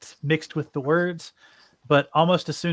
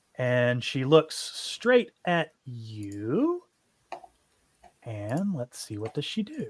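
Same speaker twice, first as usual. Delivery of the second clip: usual speaking voice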